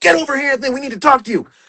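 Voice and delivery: acted, very high-pitched, projected shout. Retelling how the Federation called across a cafeteria: imitating someone yelling. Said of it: "They yell across the cafeteria".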